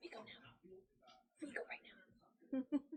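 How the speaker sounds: slow, hushed whisper, acted in character. Whispering to a fellow player in character to leave now: whispering in character. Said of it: "whispering down".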